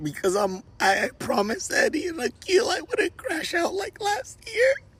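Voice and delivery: very high voice, on the verge of tears. Talking to viewers after being banned, holding back tears. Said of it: "I'm gonna try my best not to cry".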